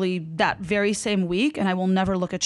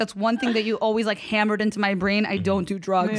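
normal talking voice

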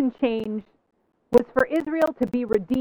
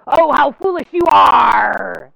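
rough, mean pirate bellow, very loud, very slow; 9 dB louder than usual. Quoting Jesus the way some hear him in the Bible, mean pirate voice. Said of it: "hearing the mean pirate voice in the Bible".

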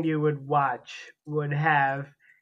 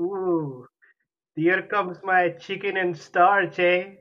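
put-on Scottish accent; 3 semitones higher than usual. Speaker tries out an accent for the others, in a Scottish accent. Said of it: "with that accent".

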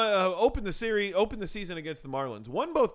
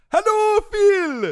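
put-on over-the-top Swedish accent, very high, very loud; 13 semitones higher, 11 dB louder than usual. Greeting the host as an interview guest: exaggerated Swedish accent. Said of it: "You're painfully Swedish".

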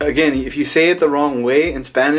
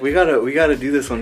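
usual speaking voice

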